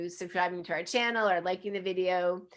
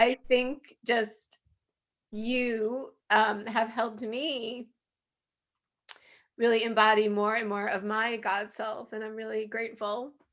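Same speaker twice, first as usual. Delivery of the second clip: tearful, crying, voice breaking with tears; 3 semitones higher than usual. Speaker thanking the other person for helping them, crying while speaking. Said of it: "I'm totally crying".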